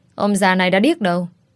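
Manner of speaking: ordinary delivery, nothing marked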